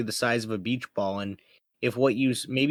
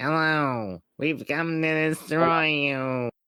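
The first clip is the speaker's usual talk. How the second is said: small, tiny miniature-creature alien voice; 4 semitones higher than usual. Speaker acting out what tiny aliens with ray guns would say, tiny alien voice. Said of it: "They're gonna have really tiny voices".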